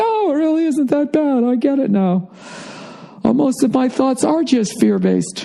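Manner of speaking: relieved voice, high and wide-eyed. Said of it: "you're like".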